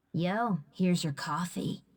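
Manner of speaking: menacing, assassin-like delivery. Handing a customer coffee in a way that sounds menacing like an assassin. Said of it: "like a one-liner right before she".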